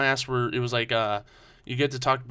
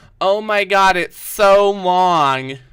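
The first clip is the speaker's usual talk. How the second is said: put-on little girl whine, very loud and very slow; 7 semitones higher, 11 dB louder than usual. Joking about a three-hour drive home: imitating a little girl complaining. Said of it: "trying to sound like a little girl about it".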